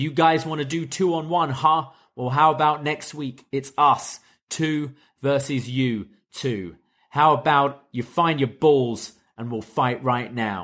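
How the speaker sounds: ordinary talk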